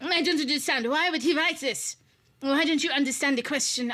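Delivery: terrible fake French accent. Quoting a woman in their class, in a terrible French accent. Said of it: "this is probably a terrible French accent".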